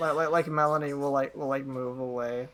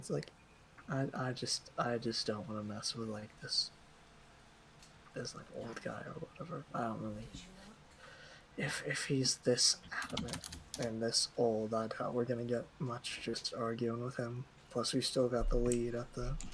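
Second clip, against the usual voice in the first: hushed, breathy, barely voiced whisper; 4 semitones lower, 9 dB quieter than usual. Player knocks once more, then speaks in a whisper tone. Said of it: "the more like whisper tone".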